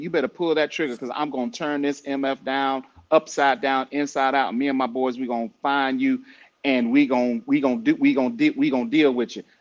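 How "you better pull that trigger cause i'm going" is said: plain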